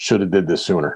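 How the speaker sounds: ordinary delivery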